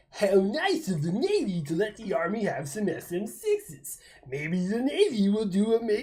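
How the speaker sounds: slow, derisive, put-on mocking reading-aloud voice. Reading someone's comment about the Navy and the Army, put-on mocking voice. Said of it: "I'm gonna read it in my universal mocking voice".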